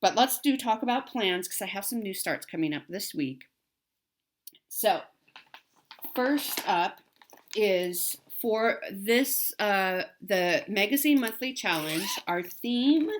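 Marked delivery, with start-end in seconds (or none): 12.3-13.1 cracked voice, higher and louder. Naming the monthly challenge theme, voice cracking. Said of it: "I don't know why my voice just cracked".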